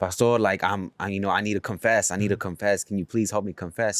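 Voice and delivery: acted panicked, pleading, begging tone. Retelling a story, the speaker quotes a lady begging the pastor: imitating a panicked plea. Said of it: "the lady was coming like panicking".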